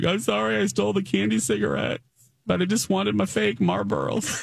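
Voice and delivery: sobbing, tearful, very high-pitched crying. Retelling a childhood apology to a cashier, imitating own past crying. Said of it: "I started crying".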